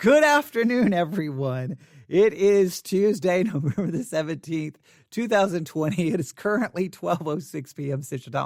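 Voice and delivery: speaking while barely holding back laughter. Opening a live broadcast with the date and time, holding back a laugh. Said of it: "I'm trying not to laugh".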